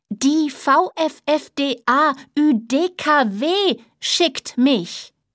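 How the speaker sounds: very slow, distinct, careful enunciation, every letter separate. Frau Honig repeats herself to an unresponsive Herr Sommerfeld, slower and more clearly. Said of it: "diesmal etwas langsamer und deutlicher".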